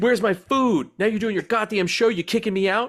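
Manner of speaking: high, angry, complaining cat voice. Joking about a cat kicked out of the room, voicing the cat, imitating an angry cat. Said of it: "He's also pissed at me".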